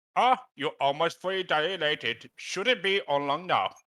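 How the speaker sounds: put-on Indian accent. Playing a doctor in a scene; Indian accent. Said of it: "love how you're giving him an Indian accent".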